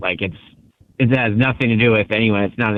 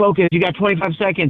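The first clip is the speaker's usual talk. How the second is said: urgent, raised, pitched-up yelling; 9 semitones higher than usual. Retelling being yelled at with seconds left in a match: imitating Maple yelling. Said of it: "Maple was yelling at me".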